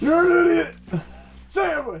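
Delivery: very high, loud, angry yelling tirade. Telling Dale they'll record yelling at him, doing a Gordon Ramsay yelling impression. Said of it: "record yelling at you".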